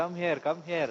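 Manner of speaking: soft, very sweet, honeyed calling. Telling a story, acting out her calling a charming boy very sweetly. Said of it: "she is calling very sweetly".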